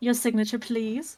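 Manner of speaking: loud, mockingly courteous tone with an edge. Pushing a parchment over for signing in character: mocking tone. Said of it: "I say mockingly as I scooch over the parchment".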